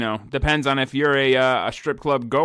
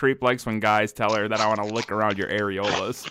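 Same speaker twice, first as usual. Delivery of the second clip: ordinary talk, nothing marked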